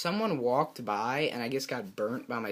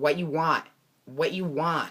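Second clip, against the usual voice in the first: put-on Chinese accent; 4 semitones higher, 6 dB louder than usual. Retelling how a cook greeted his mom at the counter: imitating a stereotypical Chinese accent. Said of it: "he's like the stereotypical Chinese guy".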